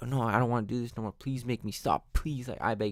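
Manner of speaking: put-on frantic distressed voice. Retelling how the person giving shocks begs the scientists: imitating a distressed plea. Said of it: "They're begging the scientists to make them stop".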